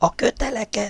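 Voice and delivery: very high, hushed whisper. Narrator reads old Lorien's line, whispered. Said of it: "súgta Lorien apó".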